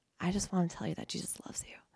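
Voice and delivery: quick, hushed whisper.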